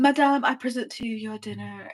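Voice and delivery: grand, ceremonious, formal fine-dining waiter voice. Bringing a woman her dinner, acting like a restaurant server: formal fine-restaurant server. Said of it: "I like came up like a server like at a fine restaurant".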